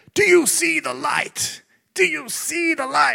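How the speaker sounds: very high, rough, preacher-style yell. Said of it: "he yells out the back to them".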